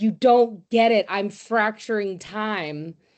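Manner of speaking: slow, drawn-out scream. Retelling a play scene where Einstein screams at Picasso: imitating Einstein screaming. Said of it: "Einstein is screaming at Picasso".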